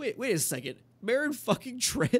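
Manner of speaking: put-on, very high, swooping, stunned, incredulous outburst. Retelling a scene where the Hound hears a name: imitating the Hound, blown away. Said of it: "kind of blown away".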